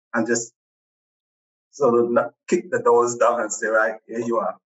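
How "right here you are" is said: ordinary talk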